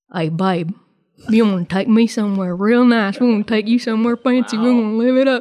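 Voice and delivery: goofy, silly, put-on flirty voice. A wife acts out the voice she uses on dates with her husband, put-on silly flirty voice. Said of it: "it's just a silly voice that I use to flirt with my husband".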